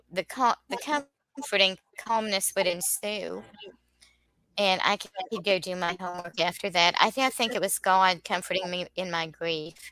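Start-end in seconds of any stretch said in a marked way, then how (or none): none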